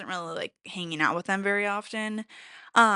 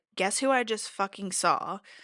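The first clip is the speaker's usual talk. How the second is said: ordinary delivery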